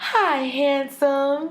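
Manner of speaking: put-on cooing baby talk. Retelling greeting a nephew on the phone: imitating own baby voice. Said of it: "So I'm in a baby voice".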